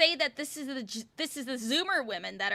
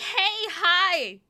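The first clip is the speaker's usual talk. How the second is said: "hi" held a little too long, high and loud; 7 semitones higher, 6 dB louder than usual. Imitating girls from high school saying hi, a drawn-out, higher-toned greeting. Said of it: "a little too long or with like a higher tone".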